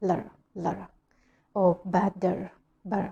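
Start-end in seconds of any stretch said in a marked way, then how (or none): 0.0-0.9 American accent, flapped T sounding like R, quieter. Showing how americans say letter quickly: american accent, t like an r. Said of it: "American English".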